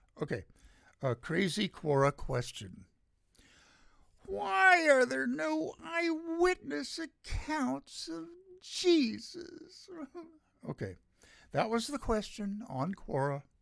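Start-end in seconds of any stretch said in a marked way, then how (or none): 4.2-9.9 put-on whine, very high-pitched and slow. Reading out a crazy Quora question: put-on whiny voice. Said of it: "I'm going to use my whiny voice".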